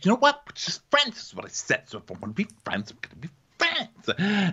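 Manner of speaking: high, prim, defensive, dropping to a whisper. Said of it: "she's like".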